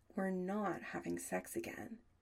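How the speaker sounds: usual speaking voice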